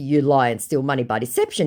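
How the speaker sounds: ordinary talk, nothing marked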